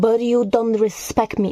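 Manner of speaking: normal talking voice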